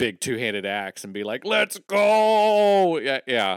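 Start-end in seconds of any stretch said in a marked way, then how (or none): 1.4-3.0 very high, loud battle cry, stretched-out go. Imagining a character as a D and D player: imitating Saladin. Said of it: "why would it not be Saladin fighting a dragon".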